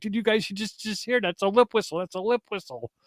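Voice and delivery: play-acted thrilled, worked-up, high excited outburst. Retelling own reaction to hearing a whistle on the channel: retelling own excited outburst. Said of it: "I was so excited".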